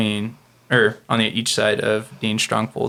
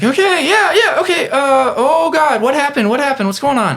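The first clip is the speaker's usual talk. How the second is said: rattled nurse voice, higher and louder; 6 dB louder than usual. Voicing the nurse arriving at the scene: flustered nurse voice. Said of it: "and Nurse comes back, and she's just like".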